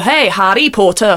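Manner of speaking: put-on Northern Irish accent, called out. Recalling what the kids in Korea used to say, in a Northern Irish accent. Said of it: "Sounds Northern Irish".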